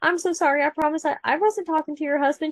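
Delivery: polite, courteous customer service voice. Speaker retelling apologizing to a woman yelling at her in a parking lot, best customer service voice. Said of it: "doing my best customer service voice".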